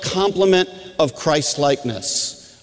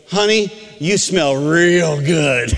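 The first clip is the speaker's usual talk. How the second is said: slow, stretched-out put-on remark. Retelling what the phlebotomist said to the whole room: imitating someone saying it loudly. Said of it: "she says loud so that everyone can hear".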